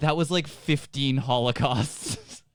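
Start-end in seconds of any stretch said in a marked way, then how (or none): none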